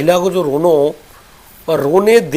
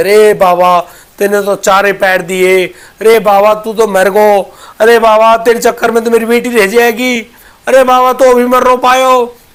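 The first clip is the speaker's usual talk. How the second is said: mock sobbing, loud bitter wailing cry of grief; 4 semitones higher, 5 dB louder than usual. Storyteller describing a crowd around a holy man: imitating a woman crying bitterly. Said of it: "बुरी तरह तरह रोती है".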